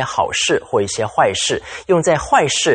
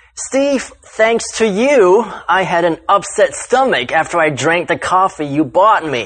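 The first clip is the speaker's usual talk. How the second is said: dry, ironic, sarcastic backhanded tone; 4 semitones higher than usual. Showing how the phrase is used sarcastically, blaming Steve over the coffee: sarcastic tone. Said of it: "with a sarcastic tone".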